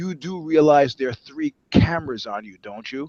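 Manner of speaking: theatrical, dramatic, full stage whisper. Retelling leaning over to a man to warn him, stage whisper. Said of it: "saying at my best stage whisper".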